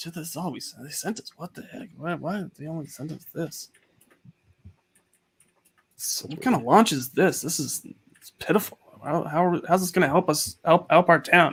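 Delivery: quiet grumbling under the breath. Someone in the back room reacting to what they were sent, muttering to himself. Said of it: "he's muttering to himself".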